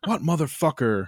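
full-on raging outburst, high and furious. Retelling how his dad reacted after his chips were eaten, mimicking dad's furious rage. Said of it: "like level rage for like 10 minutes".

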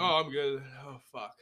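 thick-tongued speech. Struggling to talk as the others react, like a swollen tongue. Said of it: "It sounds like his tongue is swollen up".

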